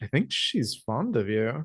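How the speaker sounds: soft muttered aside. Replying right back to the other character, muttering. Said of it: "Mutter right back like in French".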